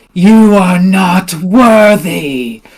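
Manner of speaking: severe, harsh female voice. Game master voicing her just before she cuts the War Boss in half, harsh feminine voice. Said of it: "like kind of harsh voice".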